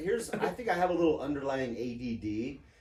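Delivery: ordinary talk, nothing marked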